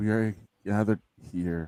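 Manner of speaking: put-on very low voice. Retelling how a speaker opened on air: imitating Brian's lowest voice. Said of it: "in the lowest voice".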